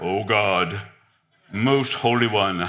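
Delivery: put-on churchy prayer voice, deep and very slow. Mocking people who change their voice when they pray, in a put-on praying voice. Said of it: "they change their voice when they start praying".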